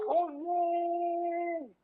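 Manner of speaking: high, mock shouting of oh yeah. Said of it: "and then I'll shout".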